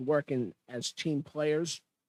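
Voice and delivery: "team players" slowed right down and heavily stressed.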